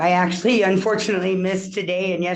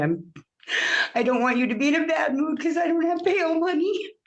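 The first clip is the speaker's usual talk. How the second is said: crying in a very high voice; 10 semitones higher than usual. Appearing before the judge by video, she answers while crying. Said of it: "I'm crying".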